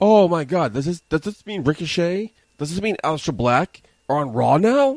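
acted-out wrestling announcer voice, high, excited, getting worked up. Retelling how the commentator reacted when two wrestlers came out: imitating Michael Cole getting really excited. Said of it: "he got really excited".

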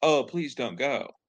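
hollow, sarcastic, passionless, mocking pleading. Describing a film's dinner scene, the speaker acts out her reply, retelling a mocking plea. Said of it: "she's almost mockingly like".

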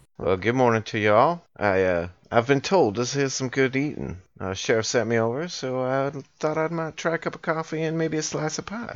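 put-on Southern accent. Playing a character greeting the locals at the counter: put-on southern accent. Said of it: "Are you affecting the southern accent".

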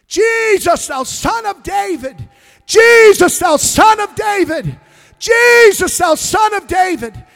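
high, loud repeated cry. Telling the Bible story of a man calling out to Jesus, retelling a loud shout. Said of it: "he shouted the louder".

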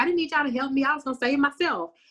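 annoyed, dismissive tone. Retelling a rescued character's reply on being found: imitating someone irritated. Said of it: "he turned around irritated".

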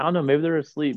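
put-on mocking voice. Retelling how Elijah mocked the others: imitating Elijah mocking. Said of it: "how he was mocking them".

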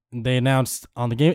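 ordinary talk

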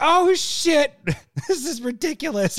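put-on little high voice. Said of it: "in that little high-pitched voice".

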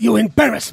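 mock quiet, contained, restrained anger. Imitating a show character's line: imitating quiet contained anger. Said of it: "you could just hear the goddamn anger in his voice".

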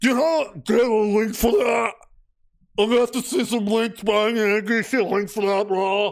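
demanding, know-it-all voice. Mocking online commenters who keep demanding links, in a Reddit neckbeard impression. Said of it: "This is my best Reddit neckbeard impression".

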